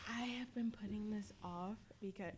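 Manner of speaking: just whispering, soft and hushed. Opening a bottle of barbecue sauce with others, whispering. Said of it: "Why are you whispering?".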